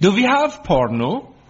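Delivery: put-on Danish accent. Retelling what a new au pair asked while flicking channels, in a put-on danish accent. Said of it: "said in their best Danish voice".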